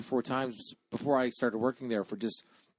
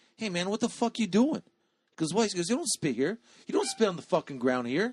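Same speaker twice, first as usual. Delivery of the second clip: put-on angry child voice, higher; 7 semitones higher, 3 dB louder than usual. Retelling a kid scolding his buddy for spitting: imitating an angry kid. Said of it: "he was actually pissed off at his friend".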